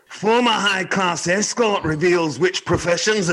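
high, slow, bad Scottish accent. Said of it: "I'd like you to try a Scottish accent".

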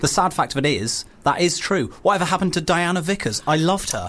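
plain

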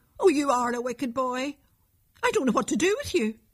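high, angry, scolding cry. A mother scolds her son for lying to her, crying out angrily. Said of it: "cried his mother angrily".

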